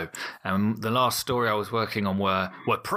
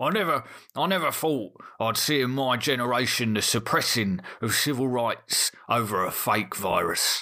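slow, mocking put-on voice; 2 semitones higher than usual. Reading a stranger's comment aloud in the voice he imagines: mocking voice of a conspiracy believer. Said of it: "I'm gonna read it in the, the voice that I assume someone who has a view like this would speak".

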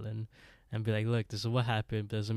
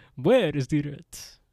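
put-on booming old-world Transylvanian count voice; 5 semitones higher, 8 dB louder than usual. Retelling a man at the door demanding rent, in a Transylvanian count voice. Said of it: "The count".

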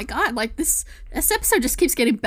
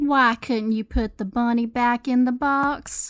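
put-on slow, drawn-out generic Southern accent. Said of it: "slipped into the, like, the little, uh, Nolans accent there".

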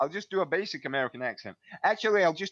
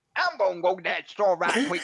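pitched-up Southern accent from Georgia; 6 semitones higher, 3 dB louder than usual. Asked to do something from Georgia or the South, in a Southern accent. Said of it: "Do something from Georgia or like the South".

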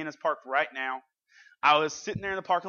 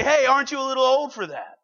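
high, loud, ever so loving tone, acted out; 9 semitones higher, 8 dB louder than usual. Retelling what a young staff member called out: imitating a staffer's loving tone. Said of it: "said that so ever so loving".

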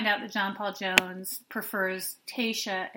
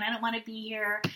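put-on female whining, crying voice. Speaker acting out how Kaylin behaved during the wedding, mock-whining as Kaylin. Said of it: "whining and crying".

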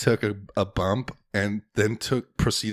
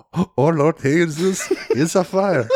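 put-on thick Spanish accent, slow and high-pitched; 7 semitones higher, 8 dB louder than usual. Repeating the line just heard from Lucia: imitating Lucia's thick accent. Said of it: "she's got a really thick accent".

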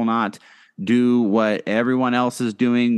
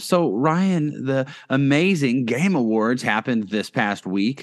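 dry sarcasm laid over praising words; 2 semitones higher than usual. Host brings up the Game Awards to a co-host, sarcastic. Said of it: "and I'm being sarcastic".

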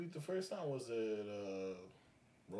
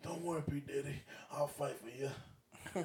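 terrible put-on voice, high-pitched and drawn out; 6 semitones higher than usual. Joking that a wrestler might step in: Booker T voice. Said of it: "That's my Booker T voice".

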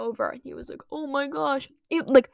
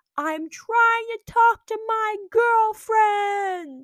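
mock, very high, slow, drawn-out shriek; 9 semitones higher, 4 dB louder than usual. Retelling how a boy answered the lunch ladies, retelling a scream. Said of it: "And he screams".

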